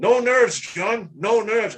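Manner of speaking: loud, high, screamed-out cry. Retelling the moment of drawing a bow on a deer, imitating Joe Morris screaming. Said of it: "Joe Morris screams out".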